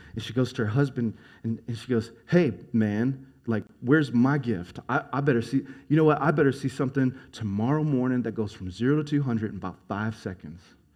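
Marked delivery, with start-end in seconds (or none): none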